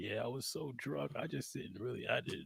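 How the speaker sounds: acted pathetic, very deep, hushed, soft pitiful voice. Recounting a phone call, speaker imitates the man on the phone: imitating his pitiful voice. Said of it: "he sounds so pitiful".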